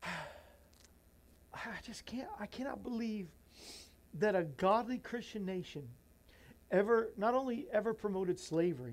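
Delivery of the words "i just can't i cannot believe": high, choked-up, tearful whisper. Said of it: "I'm sorry".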